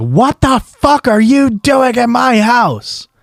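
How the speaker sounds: acted-out, very high, drawn-out shrieking scream. Retelling a woman coming out of her house at the speaker; imitating someone screaming. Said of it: "she comes out screaming at me like".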